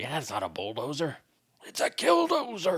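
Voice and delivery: unhinged, frantic speech in Dutch. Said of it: "He's like".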